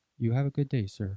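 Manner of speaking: hushed, low, soft, quiet murmuring voice. Retelling what a cop said over his mic as the driver left, imitating a cop's low voice. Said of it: "you hear the cop like low with his mic on".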